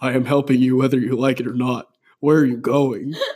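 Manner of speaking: low-toned voice. The narrator answers a woman who asked why they are here, in a low-toned voice. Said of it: "in a low-toned voice".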